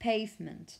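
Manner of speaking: pavement said with stress on first syllable pave-. Warning learners about word stress, pavement stressed on the first syllable. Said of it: "the stress is on the first syllable".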